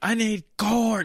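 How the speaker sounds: shrill, very loud, high-pitched shout. Retelling how cooks on the line yell for food: imitating cooks yelling. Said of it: "That are just yelling at you".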